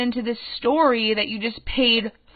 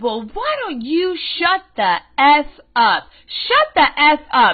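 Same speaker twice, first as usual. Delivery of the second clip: put-on woman's angry yell, higher and louder; 3 semitones higher, 4 dB louder than usual. Retelling a woman turning on the speaker: imitating a woman yelling angrily. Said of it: "getting all in my face".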